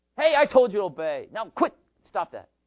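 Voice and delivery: very loud, high, cross, angry scolding tone. Illustrating how a parent might speak to children at home, in angry tone. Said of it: "a lot of angry tone".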